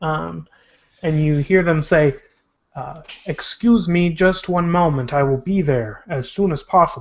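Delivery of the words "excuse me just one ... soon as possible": tinny, thin, machine-like robot delivery. Speaker retelling what you hear them say: tinny voice. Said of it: "You hear a um, tinny voice".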